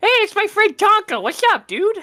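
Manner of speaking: voice shooting very high with excitement. A player's character greets his friend Tonka: really high voice. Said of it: "my voice went really high there".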